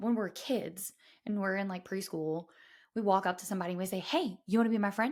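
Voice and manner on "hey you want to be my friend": usual speaking voice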